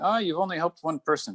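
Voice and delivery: high, snide, dismissive mocking tone.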